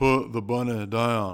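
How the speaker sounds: awful Southern twang, loud, slow and drawn-out. Recounting a film, speaker quotes the actor's line in a Nicolas Cage Southern accent. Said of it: "he's got the worst Southern accent ever".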